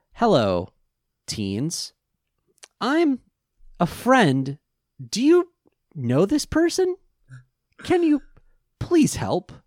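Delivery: stilted, high, sing-song robot forcing normal inflection. Mocking how a man talks: robot trying to sound normal. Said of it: "like a robot that like just figured out contractions and inflection".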